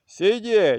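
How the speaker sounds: high shouting at full voice. Narrator reads a warden bursting into the section, shouting. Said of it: "кричить".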